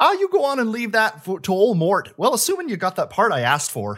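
put-on Fargo accent. Speaker quoting a line the way they normally say it, Fargo accent. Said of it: "So it's like the Fargo accent".

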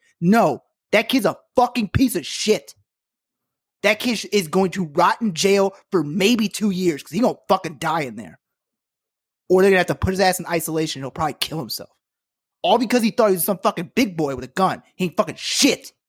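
seething, furious, heated, raging rant. Talking to listeners about a kid who shot three people, very angry. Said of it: "I'm sorry I'm so mad".

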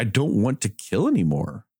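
slow, weeping, sobbing, tearful delivery. Retelling a scene where a character is crying: imitating someone crying. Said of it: "at one point he's, like, crying".

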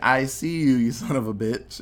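plain

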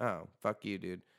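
normal talking voice

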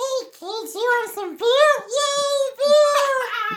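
very high, loud, fake-drunk kids' puppet voice. Joking with others about a drunk Sesame Street, the speaker does a mock-drunk Elmo voice. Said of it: "It's drunk Elmo".

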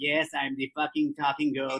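put-on goat voice.

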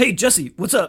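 very loud friendly voice. Retelling a message from a friend, imitating the friend. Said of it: "this is gonna be a great impression".

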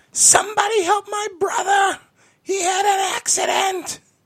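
very high, very loud, shrill, frantic panicked yell. Retelling how a woman in a store yelled for help: imitating a panicked yell. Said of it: "begins to yell at the top of her lungs".

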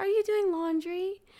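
put-on tiny, very high, cute toddler voice. Retelling what a two-year-old asked her, in a cute little toddler voice. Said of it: "just the cutest little voice".

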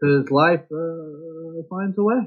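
slow delivery with a long, drawn-out uh. Quoting a movie line as an impression: Jeff Goldblum impression. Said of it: "your impressions of Jeff Goldblum".

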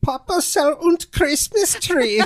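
put-on German accent, pitched very high. Doing a requested voice of a German immigrant: Barbara's voice, German accent. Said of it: "Can you do Barbara's voice?".

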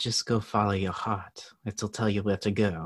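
awful, horrible put-on French accent. Quoting what a woman told the speaker, in a horrible french accent. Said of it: "no offense by my horrible French accent".

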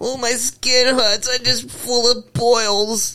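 very high caricature voice.

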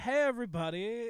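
showy, flamboyant, theatrical tour-guide-like delivery. Retelling a tour guide greeting the bus: imitating a flamboyant tour guide. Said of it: "this flamboyant tour guide".

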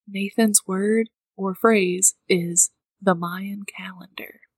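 whispered, hushed. Revealing a game phrase while the guesser is still in the apartment, whispering. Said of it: "I'm going to whisper".

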